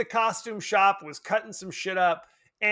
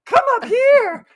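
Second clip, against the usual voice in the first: mock adult-faked child voice, higher and louder; 8 dB louder than usual. Retelling a dubbed movie scene where a girl calls: imitating a grown-up faking a child's voice. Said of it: "grown-up doing a child's voice".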